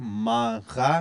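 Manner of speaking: tiny pause between syllables, slight break mid-word. Teaching how to pronounce a word, with a tiny pause between syllables. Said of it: "you hear the tiny little pause".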